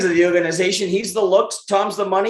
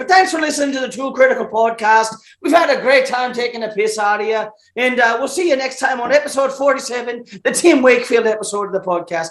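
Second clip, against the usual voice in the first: light, slight Irish brogue; 3 semitones higher than usual. Closing the podcast after being asked to use an Irish accent: Irish accent. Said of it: "I can do a little bit of an Irish accent".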